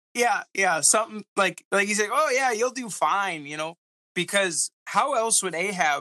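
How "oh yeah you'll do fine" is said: high, sarcastic, insincere tone. Acting out what the prophet Micaiah may have told the king: imitating Micaiah sarcastically. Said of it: "kinda sarcastic".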